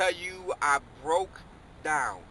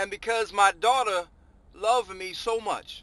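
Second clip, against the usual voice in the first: voice choking up with feeling mid-sentence; 3 semitones higher, 4 dB louder than usual. Father telling how his daughter held in her pain, choking up. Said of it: "I'm choking up talking about this".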